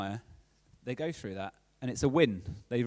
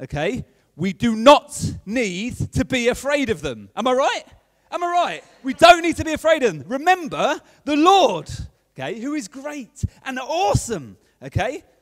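loud, rousing, stirring delivery. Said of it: "so I'm Nehemiah".

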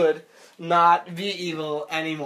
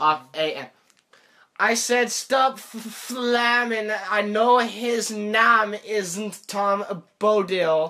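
slow speech through a delayed-feedback speech jammer; 3 semitones higher than usual. Reading a hard-to-say note aloud as a challenge, talking through a speech jammer. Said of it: "Now I'm going to say it with a speech jammer".

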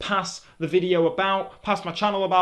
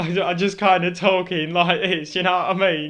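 usual speaking voice

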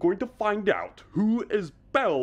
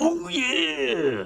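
very high, strained, straining cry; 10 semitones higher than usual. Doing a wrestler's catchphrase with a strained voice: Randy Savage impression. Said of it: "You wanna wrestle with Randy Man Savage".

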